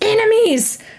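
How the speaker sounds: loud call-out, pitched very high. Game master voicing a character calling out enemies: Graja's voice. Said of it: "in Graja's voice".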